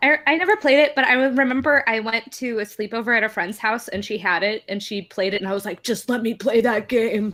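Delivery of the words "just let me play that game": put-on eager, pleading eight-year-old kid voice. Retelling wanting a friend's game at a sleepover: impression of eight-year-old self. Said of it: "you were talking like that".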